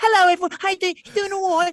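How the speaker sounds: put-on shifting between British and American accents. Imitating a sibling greeting everyone, mixed British-American accent. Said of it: "flow in and out of like being British and American".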